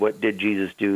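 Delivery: firm, punched stress on DID.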